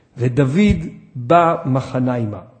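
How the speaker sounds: unhurried, slow, careful, deliberate reading aloud. Showing how to read a verse slowly, not fast: slow reading. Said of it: "תקרא את זה לאט, בוא תקרא כמוני".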